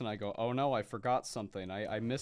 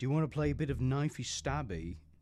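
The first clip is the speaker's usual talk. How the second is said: clumsy, bad fake British accent; 2 semitones higher than usual. Imagining being hired by gw and asked to use one, doing a british accent. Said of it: "so you're gonna learn how to use a British accent".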